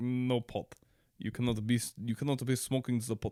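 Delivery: soft, clumsy, bad put-on Russian accent. Quoting a Russian listener's letter, in a bad Russian accent. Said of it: "if you thought it was a bad Russian accent".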